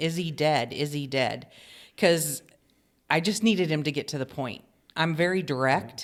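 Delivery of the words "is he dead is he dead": ordinary talk, nothing marked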